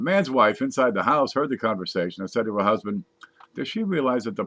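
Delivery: ordinary delivery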